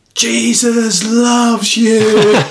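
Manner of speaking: top-of-the-voice yell, very high and loud. Recalling a prayer meeting, acting out one man who kept shouting: imitating a man shouting. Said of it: "started shouting at the top of his voice".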